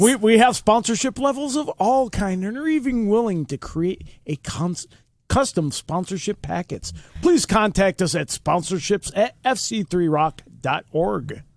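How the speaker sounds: on-air radio announcer voice. Reading out the sponsorship and contact info, in a radio announcer voice. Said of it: "That's my radio voice".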